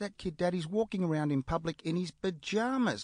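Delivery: put-on kid blurting out at the top of his voice. Retelling a child shouting out in public, imitating a child shouting. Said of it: "he shouts out".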